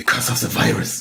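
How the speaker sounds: put-on hysterical tone, laid on thick. Showing what to say when someone asks why you wear a mask, mock-hysterical voice. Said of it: "you just put on your hysteric voice".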